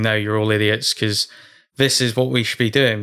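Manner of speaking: plain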